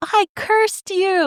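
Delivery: very high, weepy crying voice. Retelling a book scene where a character confesses a curse: imitating someone crying. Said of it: "she's, like, crying and she's like".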